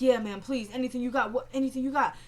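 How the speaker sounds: normal talking voice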